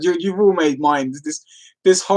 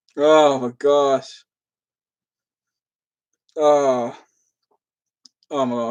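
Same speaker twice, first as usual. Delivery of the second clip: giggling through the words while talking; 2 semitones lower than usual. Reacting to an imagined phone call bit: laughing while talking. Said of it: "I can't stop laughing now".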